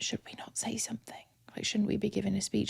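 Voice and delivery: put-on mutter under breath. Retelling a question to a fellow winner as they were led off stage, muttering under breath. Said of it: "And under my breath".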